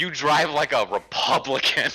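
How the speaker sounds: high, jeering holler, stretched long. Retelling an argument between two drivers at a gas station: imitating someone shouting. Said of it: "And he just shouts".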